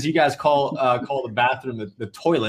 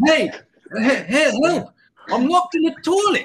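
put-on South African accent, much higher pitch; 14 semitones higher than usual. Retelling what a man said over the building's speakers: South African accent. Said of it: "this guy with this South African accent".

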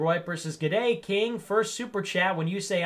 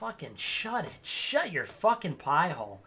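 furious, fed-up, angry swearing outburst; 5 dB quieter than usual. Speaker reading the news snaps at the story, really pissed off. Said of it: "I'm just really pissed off".

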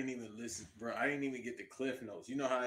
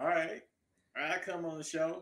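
horrible put-on Southern accent, pitched up; 5 semitones higher, 3 dB louder than usual. Imagining how someone agreed to come on the show, in a horrible southern accent. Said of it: "That's a horrible accent".

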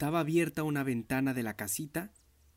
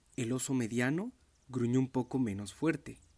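plain

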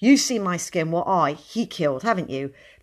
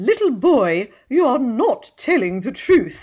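clear, high, ringing raised voice; 6 semitones higher, 6 dB louder than usual. Narrator reads a voice from behind the crowd addressing a little boy, clear, high voice. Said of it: "a clear, high voice".

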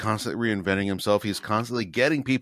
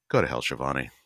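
put-on, lower-pitched, quiet muttered delivery; 8 semitones lower than usual. Retelling a remark made during the break, imitating a mutter under the breath. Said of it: "under his breath".

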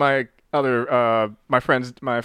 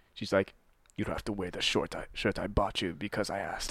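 put-on thick Latin accent, much lower, quieter; 5 semitones lower, 13 dB quieter than usual. Telling a story about the oldest sister; imitating sister's thick Latin accent. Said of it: "why are you giving her that accent?".

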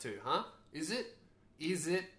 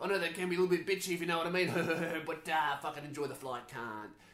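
crass ocker bogan announcer voice; 2 semitones higher, 3 dB louder than usual. Retelling a pilot's in-flight announcement, bogan airline pilot impression. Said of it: "Like the most bogan airline pilot".

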